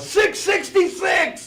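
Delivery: drawn-out high yell. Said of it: "roll down the window and yell".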